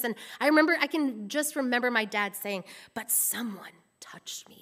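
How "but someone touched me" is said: whispered, hushed, breathy pulpit preacher voice. Retelling how dad told a Bible story, in his preacher voice. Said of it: "in his like preacher voice".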